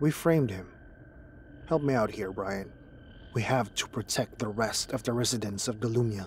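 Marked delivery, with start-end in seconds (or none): none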